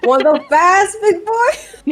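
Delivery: booming, very high, drawn-out sing-song yell. Asking a deafened ally whether they want to be hastened: yelling across the field. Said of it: "Given the fact that you're yelling".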